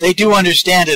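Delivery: high, loud, laughing throughout. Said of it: "I'm just laughing here".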